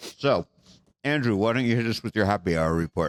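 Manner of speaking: speaking with food in mouth. A host with a mouthful of chicken hands over to andrew, talking with mouth full. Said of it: "I got a mouthful of chicken".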